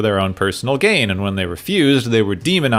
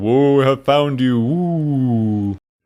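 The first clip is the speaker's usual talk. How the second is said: unhurried, slow delivery, woo drawn out at end; 3 semitones higher than usual. Describing a scene with a big voice and demonic imagery, you do a George Takei impression. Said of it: "I'm pretty sure it's George Takei going".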